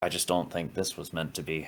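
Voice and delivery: muttered quietly. Rook says the last bit while walking into the tent, under his breath. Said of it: "he'll say that last bit under his breath".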